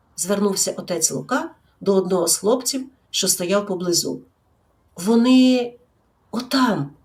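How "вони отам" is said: quiet, soft, hushed stammering. A boy answers the priest's question about the teacher; quietly stammering. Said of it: "тихо заікуючись".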